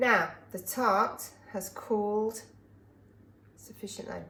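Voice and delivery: slow, measured, deliberate, drawn-out delivery. Announcing to another speaker that the tart has cooled, talking slowly. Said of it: "Why are you talking so slowly?".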